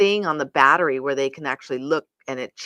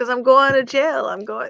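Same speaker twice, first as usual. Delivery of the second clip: high voice, words bubbling through acted laughter; 8 semitones higher, 4 dB louder than usual. Retelling an arrested man in a police car answering a policeman: retelling a man laughing. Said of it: "and he's laughing and laughing and laughing".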